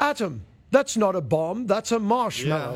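thin, half-hearted put-on British accent. Repeating the line in the british voice he chose: weak british accent. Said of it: "That's my weak British accent".

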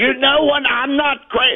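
shrill, unhinged, frantic screaming, high pitch. Retelling a dinner table argument, losing it: imitating own past screaming. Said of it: "then I'm screaming like I need medication".

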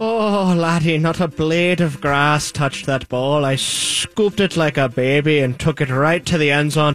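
put-on Irish accent. Answering a question as Frank O'Harris: Irish accent as Frank O'Harris. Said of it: "Could you imagine him with an Irish accent?".

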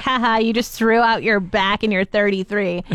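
ordinary talk

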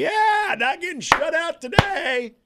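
very high, play-acted, snide, sarcastic whoop. Retelling standing up at a game after the Bears' garbage touchdown, with a sarcastic cheer. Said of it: "I stood up just like sarcastically".

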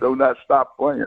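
play-acted, loud, high shouted yell. Retelling the band director shouting to the band while arrested: imitating someone yelling. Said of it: "he's yelling at the band".

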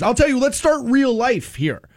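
plain

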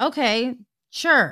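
mock, very dismissive tone. Retelling how she answered the irate guy, mock-dismissive reply. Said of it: "she's just kind of being super dismissive".

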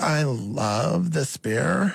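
put-on sorority girl voice. Asked at auditions to say the line the same way, in a sorority girl voice. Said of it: "the sorority girl version".

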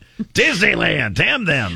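small, high, swooping ranting outburst. Mocking another speaker's rant about Disneyland: mock ranting. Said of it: "your little rant there".

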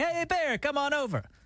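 slow, easygoing, friendly, welcoming call. Retelling how the family called out to a bear: imitating a friendly call to a bear. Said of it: "which sounds friendly".

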